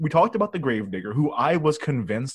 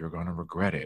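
muttered under breath, quieter, lower, faster; 7 semitones lower, 8 dB quieter than usual. Retelling what a character mutters as he runs away, muttered under his breath. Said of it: "he mutters under his breath".

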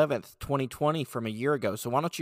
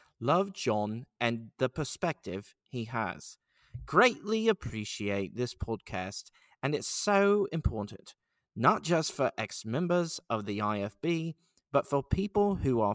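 put-on English accent, slow, read-aloud delivery. Reading a comment about the podcast aloud in an English accent. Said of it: "I'm going to read this in an English accent because it just sounds cooler".

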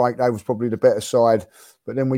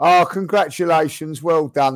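mock, forced, slower speech through gritted teeth; 4 semitones higher than usual. Retelling how Spurs fans poked their heads in, mock congratulations through gritted teeth. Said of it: "Like through gritted teeth".

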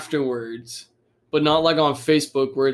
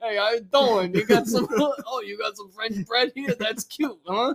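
put-on Italian guy accent, much higher; 8 semitones higher than usual. Imagining a remake where the beast is an italian guy: italian guy accent. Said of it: "instead of the beast, it was just an Italian guy".

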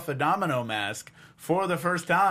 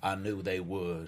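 put-on failed British accent sounding Southern, lower, quieter; 8 semitones lower, 7 dB quieter than usual. Imitating a character putting on clothes: bad Rip impression, came out Southern. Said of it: "I cannot do a good Rip impression".

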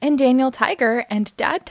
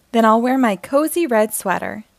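usual speaking voice

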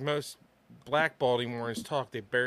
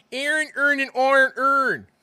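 Baltimore accent, much higher and louder; 13 semitones higher, 10 dB louder than usual.

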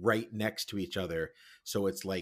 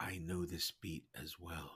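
very quiet, soft, almost scared voice; 3 semitones lower, 10 dB quieter than usual. In the dark, a man turns to a woman and speaks very quietly. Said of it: "He says very quietly".

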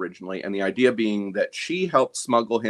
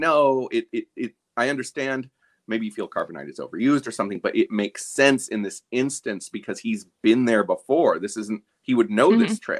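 ordinary delivery

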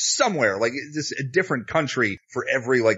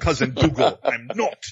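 abysmal, badly done put-on Scottish accent; 2 semitones higher than usual. Imitating an actor's abysmal movie accent: bad scottish accent. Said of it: "his Scottish accent is fucking abysmal".

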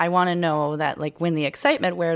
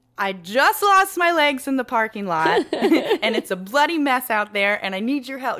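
play-acted annoying, snide sarcasm, swooping and pitched up; 7 semitones higher than usual. Angry at people who claim trauma, the speaker acts out being mock-sarcastic and annoying. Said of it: "what I really want to do is be sarcastic and annoying".

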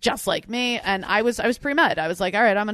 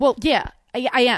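attempted put-on Jersey accent; 2 semitones higher than usual. Acting out a My Cousin Vinny scene with a partner, in a Jersey accent. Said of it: "I'll try to do a Jersey accent".

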